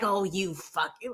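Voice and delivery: acted calm but angry cursing. Imitating a streamer swearing in his streams: imitating Monty swearing, mad but mellow. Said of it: "he is so mad. He's so mad, but he's so mellow".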